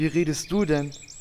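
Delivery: low talking-horse voice.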